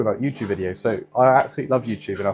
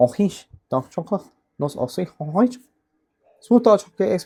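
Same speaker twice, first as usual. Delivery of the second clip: put-on Chinese accent, pitched high; 8 semitones higher than usual. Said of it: "I started doing a Chinese accent".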